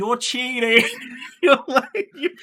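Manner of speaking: shrill, loud screaming. Recalling a game where the chat accused him of cheating, the speaker imitates the chat screaming. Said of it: "the chat is like screaming at me".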